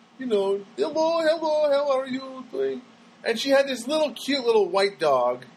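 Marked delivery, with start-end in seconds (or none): 0.8-2.8 put-on woman's pitched-up Russian accent. Retelling a lady in the neighborhood greeting the speaker, in a Russian accent. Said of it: "Russian accent".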